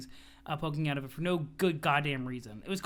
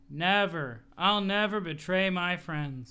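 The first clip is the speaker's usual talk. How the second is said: zombie-like delivery, much slower; 2 semitones higher than usual. Reading a story aloud, one boy answers another's demand, said like a zombie. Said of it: "he said it like a zombie".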